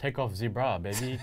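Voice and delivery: put-on French accent. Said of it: "Did you get the French laugh?".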